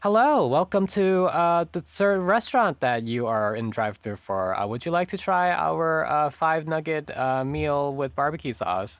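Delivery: fake-cheery robot voice. A fast food drive-through worker greets a customer in a fake-happy robot voice. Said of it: "sound like I am a really happy robot".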